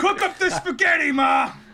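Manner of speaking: put-on Italian-American accent. Playing a British son being turned Italian, put-on Italian-American accent. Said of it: "Why do you keep talking like that?".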